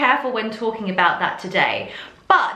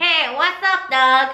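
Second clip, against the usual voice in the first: cartoon rabbit voice, sound placed forward in the face; 3 semitones higher than usual. Teacher demonstrates a voice-placement exercise for students, Bugs Bunny voice. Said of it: "sounding like Bugs Bunny".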